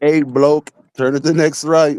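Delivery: put-on Scottish accent in sat-nav voice. Retelling the GPS directions from Siri: imitating Scottish-voiced Siri. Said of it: "I almost fell in love with the Scottish voice".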